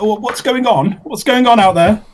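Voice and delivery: loud shout, very high-pitched, character voice. Player voices their character during the game; in-character shout. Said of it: "I think I'll shout out".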